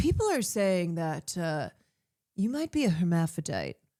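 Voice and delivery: low, grave, very serious news-anchor delivery. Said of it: "in his very serious, you know, newscaster voice".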